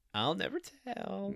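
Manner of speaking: coy, flirtatious, coquettish, soft, high pitch. Answering a question on a podcast, in a put-on coquettish voice. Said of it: "you do that coquettish voice and say I'll never tell".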